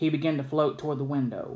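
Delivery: ordinary delivery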